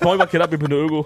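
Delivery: mock Luxembourgish voice, squealed.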